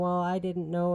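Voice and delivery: mock tearful crying voice. Retelling a coworker's excuse after being caught: imitating someone crying. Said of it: "she was crying and saying".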